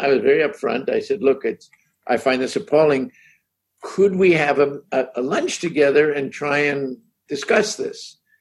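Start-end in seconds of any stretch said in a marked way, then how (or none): none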